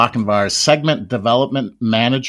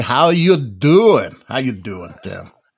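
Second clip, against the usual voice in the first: put-on teenage voice, slower. Greeting Tim the way the speaker's fifteen-year-old son would, imitating a fifteen-year-old son. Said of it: "as my fifteen-year-old son would say".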